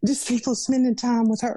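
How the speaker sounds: on the verge of tears. A mother talking about her daughter, about to cry. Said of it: "I'm about to cry saying this".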